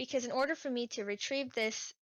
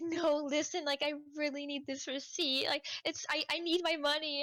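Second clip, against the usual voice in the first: tearful, crying, begging voice; 4 semitones higher than usual. Retelling a woman pleading for her receipt at a machine, imitating her crying. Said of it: "She she starts crying in front of me".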